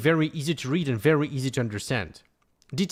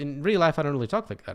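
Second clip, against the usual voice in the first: ordinary delivery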